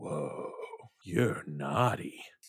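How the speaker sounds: breathy, breathed-out whisper. Voicing Krampus, who sniffs and looks at Evil Kitty: Krampus voice. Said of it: "he looks right at Evil Kitty".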